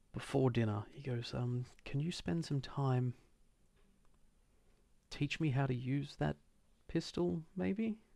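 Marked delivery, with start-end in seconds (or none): 1.9-8.0 earnest, high, nearly begging, almost pleading tone. Voicing a character asking another for pistol lessons before dinner: acted pleading request. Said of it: "he's almost pleading".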